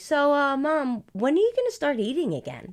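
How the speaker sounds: high, swooping, worried concerned tone. A fasting mother quotes her son Andrew, imitating Andrew's concern. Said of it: "like concerned".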